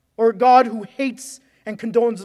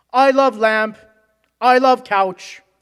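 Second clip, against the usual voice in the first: clumsy, too-loud, awkward announcement voice; 2 semitones higher, 4 dB louder than usual. Retelling a line from the movie Anchorman: loud, awkward Brick voice. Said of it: "starts saying in a loud, awkward voice".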